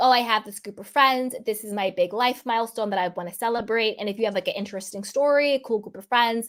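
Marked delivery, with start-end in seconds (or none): none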